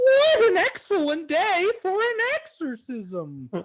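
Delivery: eerie put-on spooky voice, pitched very high. Reading taglines aloud on request, in a spooky voice. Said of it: "Do them in a in a spooky voice".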